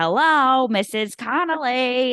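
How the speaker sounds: slow, drawn-out voice, every word stretched. Retelling a movie scene, quoting the realtor: Harvey Fierstein voice. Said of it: "in his Harvey Fierstein voice".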